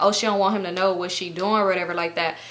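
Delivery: ordinary delivery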